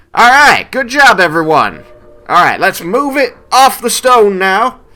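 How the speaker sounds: very high, very loud, unconcerned calling-out voice. Narrating for the players, voicing Papa Mendes as he directs everyone: Papa Mendes calling out directions. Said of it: "as he's directing everyone else".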